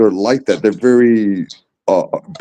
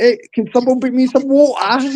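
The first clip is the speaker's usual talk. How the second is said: put-on very high-pitched, heavy, thick British accent; 13 semitones higher than usual. Recalling a woman he loved who had a strong accent, imitating her strong british accent. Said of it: "She had the deepest accent".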